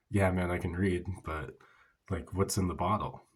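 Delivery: plain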